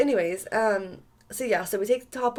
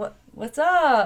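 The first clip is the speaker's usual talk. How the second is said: painfully awkward, acted-out delivery; 3 dB louder than usual. Retelling a date where a guy flirted with her: imitating own awkward greeting. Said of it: "all awkward as fuck".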